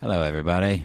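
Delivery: slightly British accent. Host greeting everybody at the start, in a slightly British accent. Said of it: "That sounded a little redcoat".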